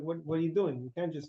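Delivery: normal talking voice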